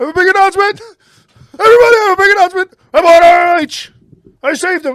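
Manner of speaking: very loud, shrill, high-pitched and manic. Imitating a big announcement after buying a company: manic Tony Khan impression. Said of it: "came out manic as fuck".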